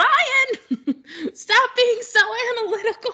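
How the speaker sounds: very high, shrill, acted-out yelling. Recounting replying to Ryan's message during lunch, retelling a yell at the phone. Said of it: "I'm yelling at my phone".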